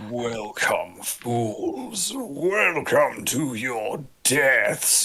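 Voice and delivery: voice echoing out loudly. Game master voices someone greeting the adventurers in the room, loud echoing voice. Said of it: "You hear this loud voice beginning to echo out".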